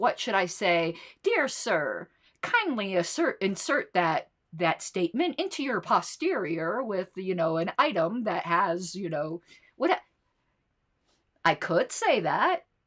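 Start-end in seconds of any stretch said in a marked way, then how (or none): none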